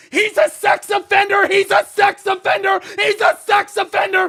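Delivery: shrill screaming at full volume, very high and loud. Retelling a moment at a pizza place, imitating Lane screaming into the microphone. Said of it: "he starts screaming".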